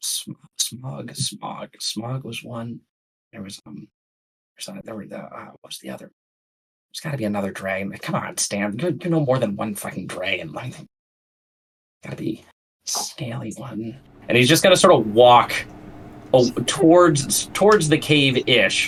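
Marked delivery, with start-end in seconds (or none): 0.0-14.0 very hushed, quiet under-the-breath mumble. Voicing a character ambling toward the cave: muttering under his breath. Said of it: "You can hear him muttering under his breath".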